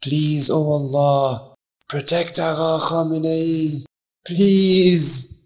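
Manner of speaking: whispered under breath. A man carrying a wounded man through a crowd prays, whispered under his breath. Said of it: "he whispered under his breath".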